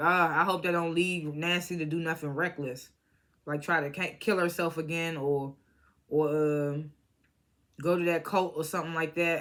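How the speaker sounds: plain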